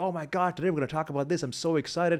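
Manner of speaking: high-energy excited gush. A speaker demonstrates how to address a sleepy audience, high-energy excited. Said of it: "everyone's really sleepy and you're like".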